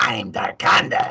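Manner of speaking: hissy, growly voice, pitched high. Explaining a voice from Power Rangers, the speaker demos the Darkonda voice. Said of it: "he became kind of hissy and high and, and growly at the same time".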